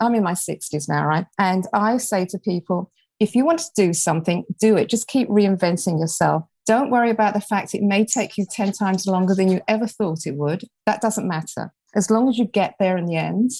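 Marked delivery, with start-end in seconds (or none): none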